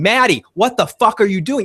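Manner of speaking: mock, loud yelling outburst. Retelling yelling at the television screen during the show: retelling own yelling. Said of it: "I was yelling".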